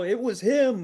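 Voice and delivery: high, loud, slow dramatic dying cry.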